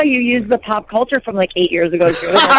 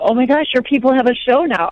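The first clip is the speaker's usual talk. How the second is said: usual speaking voice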